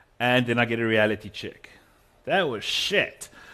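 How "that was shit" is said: put-on Australian accent, a best attempt. Retelling a consultant's blunt reply to sent audio: put-on australian accent. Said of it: "my best attempt in an Australian accent".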